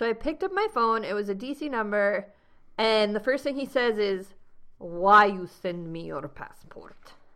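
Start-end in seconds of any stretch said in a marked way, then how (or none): 4.8-7.1 loud, very bad, fake Russian accent. Retelling a phone call from a man with a heavy russian accent: very bad russian accent. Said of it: "I'm doing a very bad Russian accent right now".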